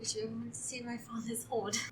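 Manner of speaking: very soft, breath-only half-whisper, close up. Voicing a character who leans over to another character: half-whispering in character. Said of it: "I lean over and I whisper in your ear".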